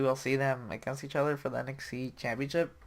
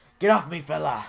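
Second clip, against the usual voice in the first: higher, louder put-on screaming wrestler voice; 3 semitones higher, 9 dB louder than usual. Acting out Sheamus pushing off an attacker: imitating Sheamus screaming. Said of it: "He's just, like, screaming".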